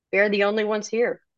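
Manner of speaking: usual speaking voice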